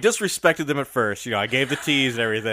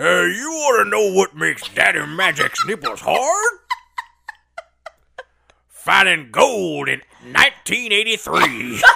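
put-on grizzled prospector voice, much higher; 6 semitones higher, 5 dB louder than usual. Doing a dare to say a catchphrase, in a grizzled prospector voice. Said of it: "as if you were a grizzled prospector".

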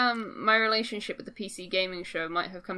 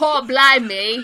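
mock fake British accent, higher and louder; 5 semitones higher, 11 dB louder than usual. Teasing another speaker about their british accent: imitating a bad british accent. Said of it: "you don't do British accent. You're just like".

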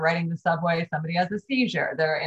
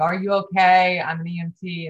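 ordinary talk, nothing marked

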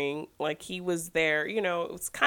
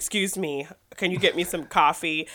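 snooty, stuck-up put-on American accent, nose in air. Retelling a movie scene where an actor orders coffee: imitating a snooty american accent. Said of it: "he's really snooty when he comes in with his American accent".

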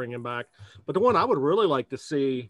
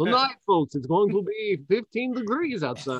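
put-on Russian accent, much higher pitch; 7 semitones higher than usual. A speaker does their weatherman impression: Mark Weinberg impression, Russian accent. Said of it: "my Russian accent".

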